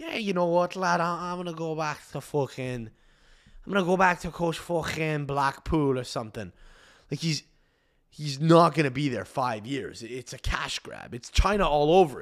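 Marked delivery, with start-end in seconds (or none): 0.0-6.5 put-on Scouse accent like a young Liverpool man. Imagining Steven Gerrard quitting his Saudi club: Steven Gerrard impression. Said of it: "the Scouse accent".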